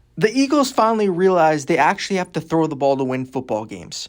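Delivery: normal talking voice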